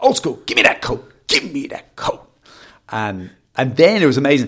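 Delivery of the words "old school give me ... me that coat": put-on threatening, pushy, insistent, menacing voice. Retelling a man shouting at the speaker, imitating a man shouting. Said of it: "he's shouting".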